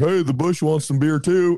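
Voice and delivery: put-on loose drunk voice. Asking about him pouring beer on a rose bush: mock-drunk Brandon impression. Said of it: "Was he being like drunk and being like".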